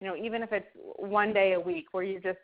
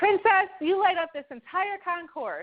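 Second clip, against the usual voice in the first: mock booming, very high announcer-style voice; 10 semitones higher, 4 dB louder than usual. Retelling a man calling out across the airport check-in area, booming voice. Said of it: "I hear this booming voice".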